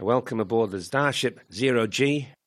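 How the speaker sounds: bad put-on Australian accent. After introducing himself, welcoming listeners in a terrible Australian accent. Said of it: "doing my terrible Australian accent".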